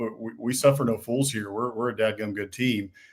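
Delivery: ordinary delivery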